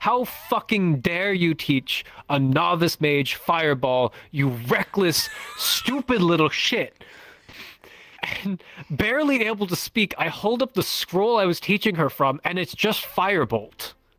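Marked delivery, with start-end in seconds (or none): 0.0-7.0 mock yelling, slower. Retelling a game story where his master struck him and yelled at him, retelling a yell. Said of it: "he yells at me saying".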